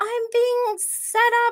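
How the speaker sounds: very high-pitched, shrill yelling outcry. Recapping news footage of Sonia Morgan, imitating her yelling. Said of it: "she's yelling".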